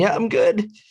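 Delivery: very high, loud, cringing delivery. Imitating the other speaker answering the dentist's assistant: imitating a cringing reply. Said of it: "Dude, cringing".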